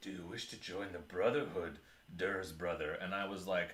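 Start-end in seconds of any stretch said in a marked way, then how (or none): 0.0-2.9 acted whispering voice. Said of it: "started whispering in my ear".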